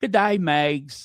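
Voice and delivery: very bad put-on Australian accent. Greeting people by name with G'day in a bad Australian accent. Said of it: "I do the worst Australian accent".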